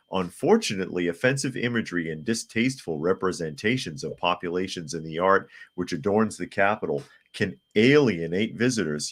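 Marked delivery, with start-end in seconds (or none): none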